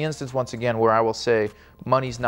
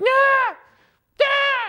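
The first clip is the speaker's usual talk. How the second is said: put-on very high, frightened little-girl screams; 4 dB louder than usual. Retelling being locked onto a roller coaster by dad; retelling screaming like a little girl. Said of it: "Literally screaming like a little girl".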